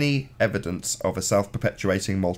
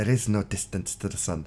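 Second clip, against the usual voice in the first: bad, put-on Dutch accent attempt; 4 dB quieter than usual. Attempt a Dutch accent that you admit you can't do. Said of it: "I can't do a Dutch accent".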